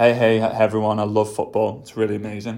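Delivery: low, flat, passionless, no-energy monotone. Showing how someone without passion sounds talking about football: flat, without passion. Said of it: "I'm not gonna be like this".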